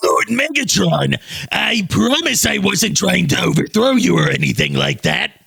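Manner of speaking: rough, high-pitched growling. Voice actor demonstrating his new take for the Armada Bridged audio, growly Starscream voice. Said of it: "my growly voices have gotten better".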